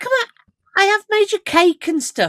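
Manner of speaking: high, loud, squealing mock indignation.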